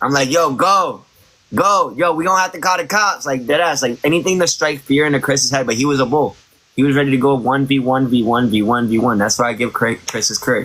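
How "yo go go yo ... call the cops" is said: screaming, stretched out slow and high. Recounting an altercation, the speaker re-enacts what they said then, retelling screaming. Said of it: "I'm screaming the whole time".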